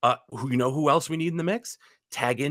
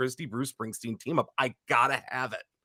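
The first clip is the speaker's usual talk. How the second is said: ordinary talk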